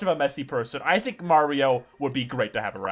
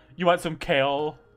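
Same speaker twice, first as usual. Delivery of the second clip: slow, loaded, put-on passive-aggressive tone. Imitating a character as a roommate offering kale: mock passive-aggressive tone. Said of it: "I think he'd be passive aggressive".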